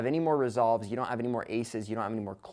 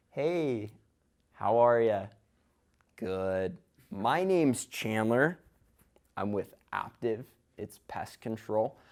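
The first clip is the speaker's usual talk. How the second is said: very slow, deliberate, drawn-out delivery. Reenacting a door-to-door sales pitch to show going slow: extremely slow pitch delivery. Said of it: "I did my entire pitch like this".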